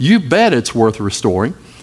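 ordinary delivery

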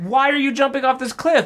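high, shrill, screeching shriek. Retelling what the woman said as he jumped after her ring, retelling a scream. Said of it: "She screams like".

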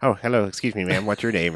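nerdy, dorky voice. Retelling a movie scene where a nerdy guy approaches a woman: imitating Vince Vaughn's nerdy character.

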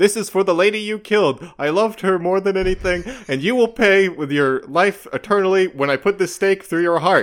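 mock shrill, very high-pitched shouting. Describing a character standing over a sleeping Dracula, imitating a yell. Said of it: "then just yells".

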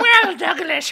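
shrill, booming, loud put-on horror-host voice. A podcast host answers his co-host, in a Crypt Keeper voice. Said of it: "Let's do the whole episode in our Crypt Keeper voices".

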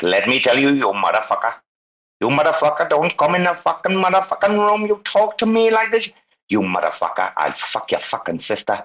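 put-on harsh ranting in a high, swooping Indian accent. Retelling what an angry man in the chat room said: imitating Kumar with Indian accent. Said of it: "this Indian fella".

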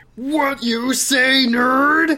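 very high, loud, drawn-out holler. Brock, having overheard the listener, confronts them; yelling. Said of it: "He yells at you".

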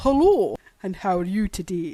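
put-on Scottish accent. Speaker tries a pretend phone call to their mother, in a Scottish accent. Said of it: "It does sound a little Sean Connery".

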